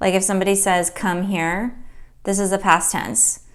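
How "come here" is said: ordinary talk, nothing marked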